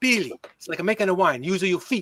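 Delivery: put-on little voice with an Italian accent and lilt. Retelling the voice of a great grandmother heard in the head: little italian voice. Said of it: "this little Italian voice in my head say".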